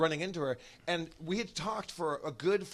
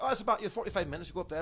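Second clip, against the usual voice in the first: casual, easygoing put-on Scottish accent; 3 semitones higher than usual. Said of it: "he was doing a Scottish accent".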